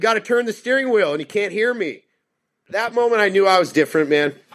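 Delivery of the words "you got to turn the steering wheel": acted high, hurried shouting. Recalling yelling, unheard, at a panicking driver spinning out, retelling a yell. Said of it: "And I'm yelling".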